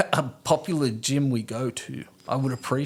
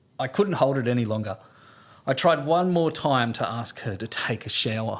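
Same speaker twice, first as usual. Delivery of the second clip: normal talking voice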